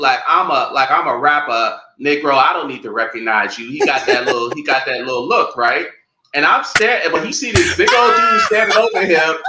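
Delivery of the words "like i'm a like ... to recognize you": normal talking voice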